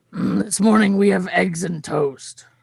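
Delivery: exhausted, worn-out voice. Narrator voicing the chef who greets the group, exhausted chef voice. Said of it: "he he looks so exhausted".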